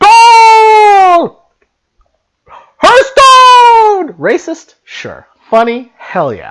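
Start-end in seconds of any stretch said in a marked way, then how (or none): 0.0-4.2 very loud, very high, drawn-out, super-excited sports announcer yell. Impression of a soccer game announcer, mock-excited shouted announcer call.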